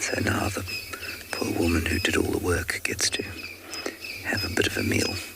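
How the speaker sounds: very soft, hushed whisper. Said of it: "So I'm whispering very softly".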